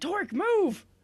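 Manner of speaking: very high, loud yelling. Ending the turn by calling out to torque, yelling. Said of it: "And I'm yelling".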